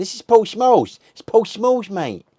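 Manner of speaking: very high-pitched, loud excited shout. Speaker recounting a video clip where a friend's mate shouts out, imitating a mate shouting. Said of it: "it's his mate shouting out".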